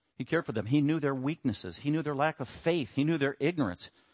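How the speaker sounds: normal talking voice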